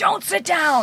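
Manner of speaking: mock screaming, pitched very high, grandmother voice. Retelling a grandmother's warning in a zoo toilet: imitating grandmother screaming. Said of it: "Screaming at me".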